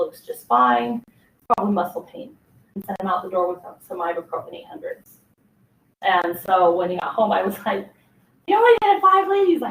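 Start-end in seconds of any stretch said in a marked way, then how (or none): 8.5-9.5 very high, shrill, loud yelling outburst. Retelling what she said to him when he got home, retelling a yell. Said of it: "why are you yelling at me?".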